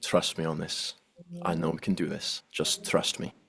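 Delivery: hushed, close-in whispered aside. Whispering in character to Rala while walking: whispering. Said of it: "I whisper over to, to Rala".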